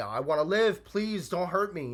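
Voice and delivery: high, drawn-out, desperate, begging scream. Describing aliens attacking, the speaker acts out the humans' plea: mock screaming plea.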